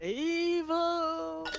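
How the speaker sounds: "evil" belted very high, loud and drawn out. Shouting a single word during a game, imitating Mermaid Man. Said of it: "That was my Mermaid Man impression".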